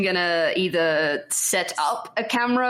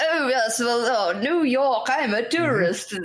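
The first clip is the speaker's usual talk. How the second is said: put-on old man voice, much higher pitched; 4 semitones higher than usual. Describing taking photos while passing as a tourist, in an old man voice. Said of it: "like the old man going".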